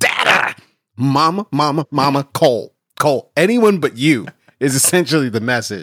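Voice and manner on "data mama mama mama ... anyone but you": slow, angry, play-acted cross toddler voice. Parent retelling how their little boy calls out, imitating an angry son. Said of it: "He's angry when he says data".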